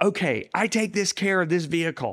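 play-acted high, mild crying out. Retelling a prayer about a vehicle, imitating screaming out. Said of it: "I remember screaming out".

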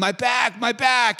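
all-out, high-pitched screaming. Retelling how a roommate with back pain started screaming: imitating someone screaming. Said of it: "starts screaming".

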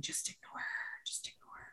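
hushed, barely voiced whisper under the breath. Retelling what a friend whispered during a schoolyard confrontation: imitating Wendy Lee whispering. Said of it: "she was whispering to me".

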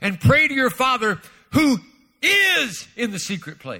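"is" punched out with strong stress. Showing how a line jumped out when read, stress on "is". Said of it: "it jumped out at me, the word "is." It exploded, the word "is." And I read it like this".

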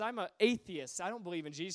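smug, self-satisfied, dismissive know-it-all tone. Retelling a woman's dismissive answer to a street evangelist: imitating a smug woman. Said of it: "She's real smug about it".

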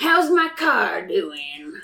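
talking through a cigar clamped in mouth. In an improvised scene, the CEO walks into the lab: cigar-chomping CEO voice. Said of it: "the CEO chomping on his cigar".

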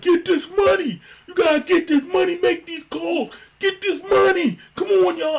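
very high, loud screaming. Speaker retells a man pacing the aisles during calls, imitating Big Jerome screaming. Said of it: "he would just scream the whole time".

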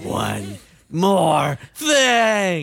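loud video game announcer voice, one word drawn out. Hosting a mock game show, the speaker announces in a Resident Evil announcer voice. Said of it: "Is that the Resident Evil announcer voice".

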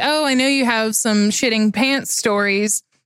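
ordinary delivery

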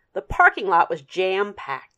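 ordinary delivery

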